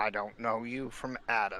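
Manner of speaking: surly, gruff, unfriendly tone. Voicing a dragon looking up at a stranger: surly voice. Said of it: "in a surly voice".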